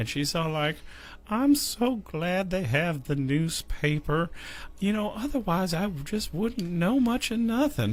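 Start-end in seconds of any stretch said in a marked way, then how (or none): 1.3-7.9 put-on Southern accent grandma voice, much higher. Retelling what Grandma said while sitting with her today, in a Southern-accent grandma voice. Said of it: "when did Grandma get a Southern accent?".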